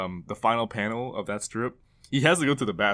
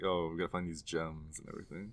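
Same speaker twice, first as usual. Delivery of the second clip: low, soft prissy voice.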